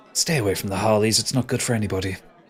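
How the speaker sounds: hushed whisper, dropping down. Voicing a woman who taps a passerby's shoulder with a warning, whispering. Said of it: "she just whispers down to you".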